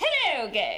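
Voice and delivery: high, loud, posh English accent.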